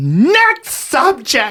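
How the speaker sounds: mock very high, shrieked, swooping screaming. Recalling a lady at the Comedy Store yelling at him, imitating a woman screaming. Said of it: "She was screaming at me".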